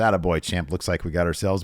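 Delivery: ordinary delivery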